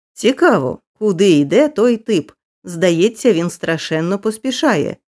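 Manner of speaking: ordinary delivery, nothing marked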